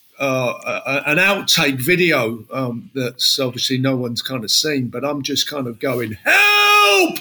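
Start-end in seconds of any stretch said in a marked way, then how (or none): 6.1-7.2 put-on very high, stretched-out scream. Retelling a fall on stage while dancing: imitating shouting for help. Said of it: "I'm just shouting at my partner".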